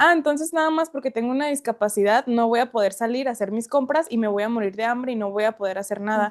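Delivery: ordinary talk, nothing marked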